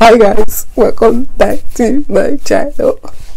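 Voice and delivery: upbeat, perky.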